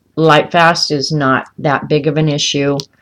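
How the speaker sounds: plain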